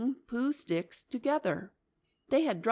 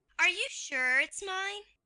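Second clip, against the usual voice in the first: squeaky excited little voice, very high pitch; 11 semitones higher than usual. Reading a story aloud, voicing Piglet asking if it's his: excited squeak. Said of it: "squeaked Piglet excitedly".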